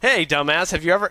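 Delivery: loud, rude, condescending, talking-down jerk tone. Showing how not to ask someone a question: rude, condescending tone. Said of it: "not say it like an a-hole".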